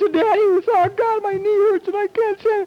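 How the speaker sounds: mock very high, weepy, crying little-kid voice. Acting out a hurt three-year-old running to Daddy: imitating a crying child. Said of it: "you got tears streaming down your face".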